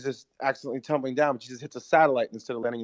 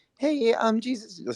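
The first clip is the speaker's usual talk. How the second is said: very high-pitched tiny devil voice; 10 semitones higher than usual. Describing a scene from their show where Satan calls Jesus, high-pitched Satan voice. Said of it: "Satan's voice is really high pitched".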